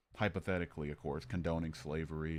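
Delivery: ordinary talk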